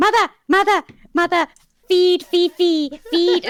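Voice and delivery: very high, loud, squealing gremlin voice. Speaker shows the voice he and his wife do for Fifi: stupid gremlin voice for Fifi. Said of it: "we do the stupid gremlin noise".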